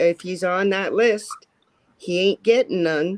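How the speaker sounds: ordinary talk, nothing marked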